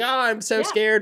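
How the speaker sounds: sarcastic put-on fear. Imitating someone's public apology, mocking a scared apology. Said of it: "He's like".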